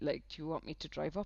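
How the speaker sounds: plain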